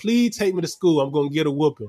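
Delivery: mock pleading. Reminding a brother of begging for a ride to school, retelling a plea. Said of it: "I pleaded with you".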